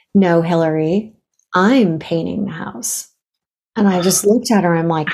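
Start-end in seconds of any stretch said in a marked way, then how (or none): 0.2-3.1 mock-solemn woman's voice. Retelling a mother's reply about painting the house: imitating a solemn mother. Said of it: "she got very, like, solemn".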